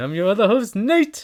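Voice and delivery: very high, loud, mascot-style cartoon voice. Introducing himself as the show's other host, in a Tony the Tiger voice. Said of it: "You sound like Tony the Tiger".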